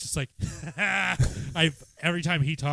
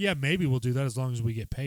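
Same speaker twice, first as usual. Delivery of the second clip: put-on cocky tone; 3 semitones lower than usual. Retelling a movie scene where a character answers a studio exec: imitating a cocky reply. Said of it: "being so cocky to the fucking studio exec".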